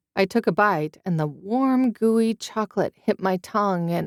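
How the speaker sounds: plain reading voice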